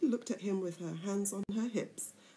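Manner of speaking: plain reading voice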